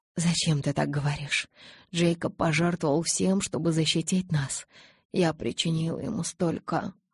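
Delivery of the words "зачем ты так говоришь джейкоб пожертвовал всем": usual speaking voice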